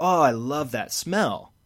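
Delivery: loud exclamatory tone, very loud. Retelling what she kept saying on a New York street, really loudly. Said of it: "she says really loudly like".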